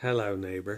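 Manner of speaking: deliberately creepy, low delivery. Opening a segment, the speaker deliberately puts on a creepy voice. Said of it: "that was meant to be creepy".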